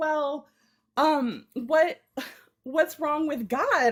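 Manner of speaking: slow, hesitant, upset tone. Retelling what someone said in a conversation: imitating someone upset. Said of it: "she was so upset".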